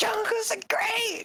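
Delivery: very high-pitched holler. Answering a request to yell about the jungle: yelling about the jungle. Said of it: "Yell about the jungle".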